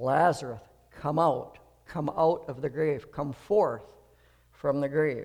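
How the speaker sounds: normal talking voice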